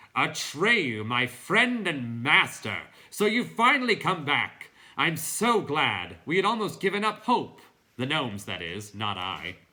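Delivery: very loud, resounding, booming, bell-like voice. Reading the story, the narrator voices Falkor greeting Atreyu: booming bell-like voice. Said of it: "He boomed in his bronze bell-like voice".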